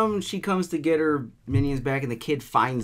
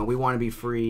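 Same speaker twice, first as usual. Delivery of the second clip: normal talking voice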